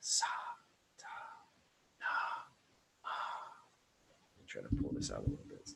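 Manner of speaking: whispered, breathy, intimate lover's voice. Teaching vocal exercises, demonstrating the whisper voice shared with a lover: whispering. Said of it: "We have our whisper voice".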